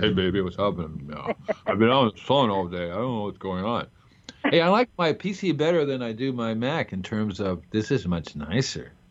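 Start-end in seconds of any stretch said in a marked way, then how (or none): 0.0-3.9 voice dropped low into put-on voice. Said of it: "my voice goes down".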